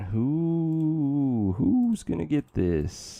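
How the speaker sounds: high ghostly wail, "who" drawn out long. Playing a game, asking who will get the new armor, sounding like a ghost. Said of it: "I just sounded like a damn ghost".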